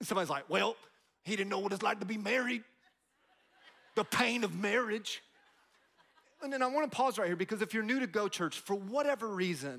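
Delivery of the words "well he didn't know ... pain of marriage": put-on rural country accent. Speaking to church, voicing somebody's objection, put-on country accent. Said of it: "that country accent is my go-to accent".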